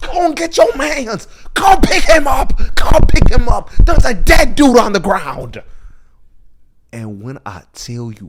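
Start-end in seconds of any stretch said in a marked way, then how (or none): 0.0-5.6 screaming, very high pitched and very loud. Retelling a movie scene with a man down on the ground, imitating Cam yelling. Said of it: "And Cam is just like yelling".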